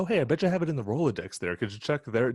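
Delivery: easygoing, chatty tone. Imitating a film character's casual phone request: imitating Brian Cox, casual normal talk. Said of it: "that sounds like the way a normal person talks".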